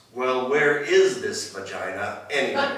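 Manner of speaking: very loud, exasperated, fed-up outburst. Retelling what a woman finally said with the other Mounties listening, very loud voice. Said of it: "in a very loud voice".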